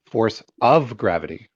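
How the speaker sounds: of stressed and lifted in pitch. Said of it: "I highlighted the word of".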